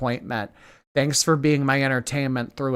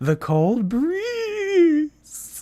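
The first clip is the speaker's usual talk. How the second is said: put-on swooping sing-song whine, very high, "breeze" stretched. Re-enacting an earlier remark that made everyone stare, in a whiny voice. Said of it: "in that whiny voice".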